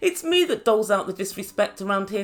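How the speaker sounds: plain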